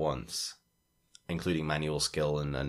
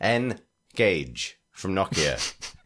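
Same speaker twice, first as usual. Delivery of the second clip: very slow, commanding put-on captain voice. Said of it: "Captain Picard said".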